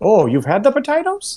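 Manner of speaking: put-on very high Irish-sounding accent. Asking another player in character whether they had the potatoes: Irish accent. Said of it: "that actually sounded very Irish".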